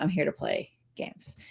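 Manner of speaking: low, unvoiced whisper.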